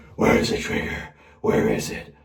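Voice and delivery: rough, raspy, creaky hero voice.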